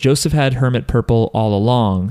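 plain

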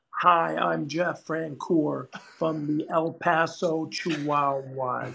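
really slow, dragged-out, deliberate delivery. Retelling a radio station prank interview, as Jeff Francoeur talking really slow. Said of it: "he was talking really slow".

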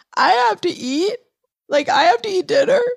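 very high, loud sobbing, pleading cry. Retelling what was said to coworkers while distraught: imitating own past sobbing. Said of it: "I started sobbing like someone very close to me had died".

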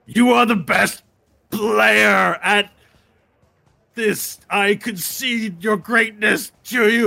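angry, grudging, forced tone, loud and slow. A character compelled to kneel and praise Varel, grudging angry concession. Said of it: "his face is scrunched up in anger".

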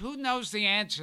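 ordinary talk

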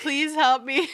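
play-acted crying, very high-pitched, loud, tearful pleading. Retelling calling to someone sitting outside the bathroom door, imitating crying while pleading. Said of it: "because I'm like crying and I'm like".

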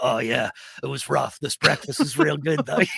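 rough, gravelly voice, ground out. Describing a film scene, the speaker imitates a character in a gravelly voice. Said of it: "like the sort of gravelly voice".

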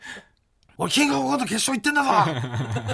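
mock enraged, furious, blown-up raging outburst. Retelling the other speaker's reaction to failing a rental screening: imitating someone raging. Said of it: "ブチ切れてたじゃないですか".

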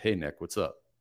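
flat, low-energy voice, falling at the end. Showing how he naturally talks in person: low energy, downward inflection. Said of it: "downward inflection".

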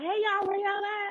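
bright, energetic, upbeat delivery at very high pitch. Retelling her calling out for everyone: imitating an upbeat call. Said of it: "Her energy up".

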